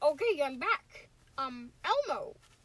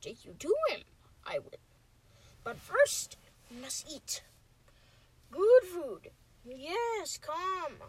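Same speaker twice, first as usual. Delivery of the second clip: put-on character voice with a whispered aside. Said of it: "I'm practicing my Yoda lines".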